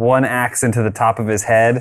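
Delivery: ordinary talk, nothing marked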